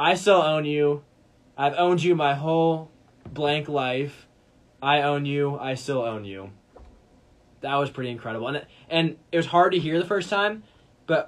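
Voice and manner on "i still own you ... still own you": mock, drawn-out, gloating, taunting yell. Retelling a touchdown run, then the yell at the Chicago crowd: imitating Aaron Rodgers yelling. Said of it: "and just yells out".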